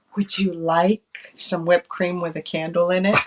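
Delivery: soft, hushed, confiding half-whisper. Retelling what the lady asked at a birthday dinner: imitating a half-whisper. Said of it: "She whispers".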